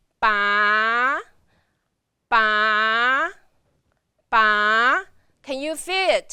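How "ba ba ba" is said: ba in second tone, sliding up from low. Showing learners how to pronounce ba: rising second tone. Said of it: "if you're gonna pronounce it in the second tone".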